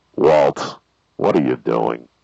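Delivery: very low, loud, pushed hitman voice. Doing the Breaking Bad character's number one phone line: Mike from Breaking Bad voice. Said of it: "did you practice his voice?".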